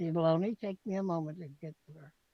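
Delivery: hushed, barely audible half-whisper. Voicing a character who half-whispers to a player: half-whispering. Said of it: "She whispers to you".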